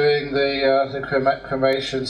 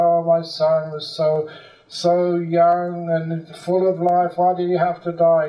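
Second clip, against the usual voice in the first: acted, slow, wailing, weeping cry; 3 semitones higher than usual. Retelling a story of a grieving father at the cremation ground: acting out crying. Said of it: "there was the father crying for his son".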